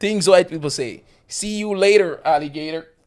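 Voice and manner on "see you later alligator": put-on accent from the deep southern US. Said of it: "Why am I getting that accent?".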